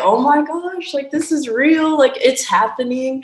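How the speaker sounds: put-on high, tearful crying while talking. Retelling calling parents after making the team: retelling own tearful words. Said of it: "crying on the phone".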